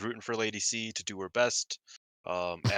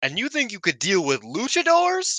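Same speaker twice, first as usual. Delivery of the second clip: yelling, higher in pitch and louder; 11 semitones higher, 7 dB louder than usual. Retelling what a wrestler yelled at a downed opponent: imitating Azumi yelling. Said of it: "Azumi just yells".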